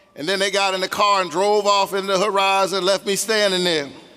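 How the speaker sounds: ordinary delivery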